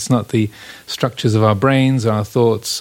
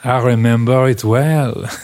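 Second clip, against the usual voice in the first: bad put-on French accent. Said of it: "Pardon my bad French accent".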